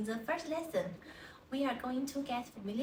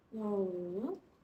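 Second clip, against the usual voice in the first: pitch dips then climbs on wu; 3 semitones lower than usual. Teaching a word with the falling rising tone: falling-rising tone on 'wu'. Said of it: "With the falling rising tone".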